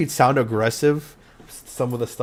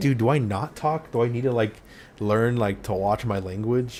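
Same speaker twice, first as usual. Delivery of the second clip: plain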